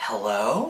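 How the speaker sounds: hello rising upward like a question. Showing how she likes to greet people on the phone: rising question tone on hello. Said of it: "make it more of a question like".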